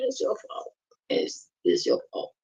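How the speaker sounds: mocking tone full of pure sarcasm. Answering a live-stream title about taking the blame: sarcastic. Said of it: "being sarcastic".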